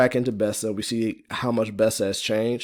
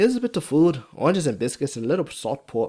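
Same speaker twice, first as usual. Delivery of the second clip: put-on higher, thick, strong Irish accent. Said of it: "Fiona's, uh, Irish accent is pretty thick and strong".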